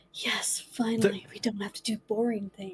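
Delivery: excited stage whisper. Speaking in character with nobody to talk to, whispering under breath. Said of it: "whispering under my breath".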